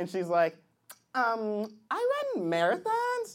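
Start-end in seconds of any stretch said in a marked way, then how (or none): 1.1-3.4 put-on young girl voice.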